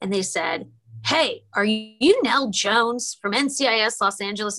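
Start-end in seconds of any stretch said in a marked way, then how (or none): 1.1-4.6 put-on barked delivery. Retelling a stranger in a coffee shop calling out from behind, imitating a barked question. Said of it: "they kind of barked at me".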